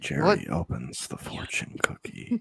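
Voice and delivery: hushed, breathy ASMR-style whispered narration. Narrating the scene, the speaker slips into mock asmr narration. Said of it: "I can do my ASMR narration".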